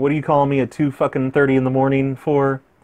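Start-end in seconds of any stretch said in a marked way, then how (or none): none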